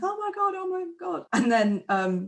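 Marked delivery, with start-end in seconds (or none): 0.0-1.3 shocked, high-pitched, blurted exclamation. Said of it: "everyone's like".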